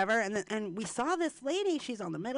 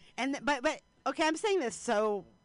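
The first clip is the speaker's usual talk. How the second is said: usual speaking voice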